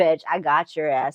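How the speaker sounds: low, sultry, sly, taunting voice. Showing how the character Percy sounds when reading the book: sultry voice. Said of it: "but a sultry voice".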